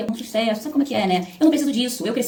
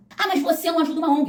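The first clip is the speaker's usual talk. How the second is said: high-pitched, needling, accusing, jabbing tone; 6 semitones higher than usual. Acting out a critic's retort in an argument, mock shouting critic. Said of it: "Para de gritar, tá gritando por quê?".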